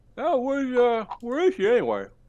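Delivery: very high, loud, swooping voice with mouth full. Voicing Roland eating at a banquet, asking a host: Roland sounding like Lenny. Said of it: "Why does Roland sound like Lenny?".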